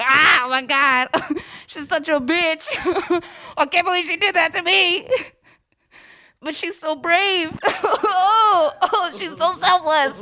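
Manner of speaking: very high, weepy, tearful, blubbering crying voice. Retelling being dumped, alone in a basement apartment: imitating own past crying. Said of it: "my basement apartment crying, like".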